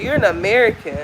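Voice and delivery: ordinary talk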